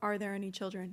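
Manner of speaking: mock robotic, mechanical put-on voice. Describing a creepy sound from a suspected alien abduction, imitating a robotic voice. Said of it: "this sort of robotic voice that says".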